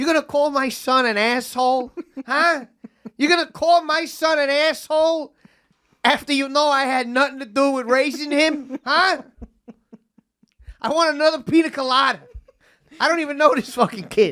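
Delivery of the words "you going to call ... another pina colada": put-on heavy, laid-on, thick New Jersey accent. Retelling a man who pipes up while the speaker lounges, thick jersey accent. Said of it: "in this thick Jersey accent".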